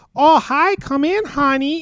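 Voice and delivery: bad Midwest accent, high, shrill and loud. Describing people up north, doing a bad midwest accent. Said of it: "that was my Midwest accent".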